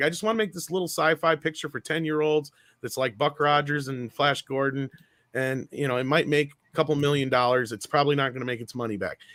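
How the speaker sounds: ordinary talk, nothing marked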